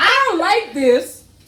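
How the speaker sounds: I stressed hard, pushed high and slow.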